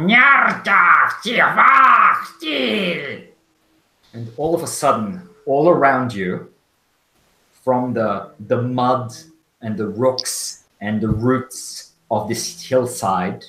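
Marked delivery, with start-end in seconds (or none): 0.0-3.3 shrill, very high, loud creature voice. Voicing a creature with glowing red eyes speaking from a hole: voice of a creature in a hole. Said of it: "you can hear the voice going".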